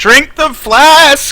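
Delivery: in-character shouting. Calling out to a bear in character as the player's hero: in-character yell. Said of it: "and then I'm gonna yell".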